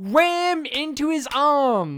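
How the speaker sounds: very slow, very loud booming, drawn-out yell. Retelling own reaction while watching a movie: retelling yelling at a screen. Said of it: "I was yelling at the screen".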